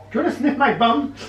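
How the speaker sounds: very high, tiny toy dog voice. Speaker voices a dog addressing another dog, in a little voice for a dog. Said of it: "Can I do a little voice for him?".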